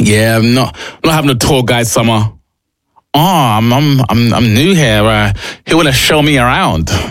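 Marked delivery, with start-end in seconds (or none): 3.1-6.9 terrible fake Australian accent, slower pace. Imitating a visitor asking to be shown around, in a terrible australian accent. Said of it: "Terrible accent".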